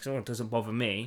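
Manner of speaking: arrogant, dismissive tone. Imitating people who dismiss the issue: imitating an arrogant dismissive voice. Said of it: "that's where the arrogance".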